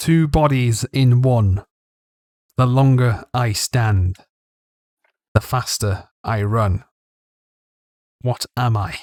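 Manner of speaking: towering, echoing voice. Voicing a riddle the towering voice poses to the player: towering voice echoing in the mind. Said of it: "a towering voice echoes in your mind".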